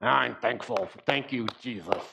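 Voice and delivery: grudging, forced through gritted teeth. Mimicking people who give forced thanks, through gritted teeth. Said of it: "doing it through gritted teeth".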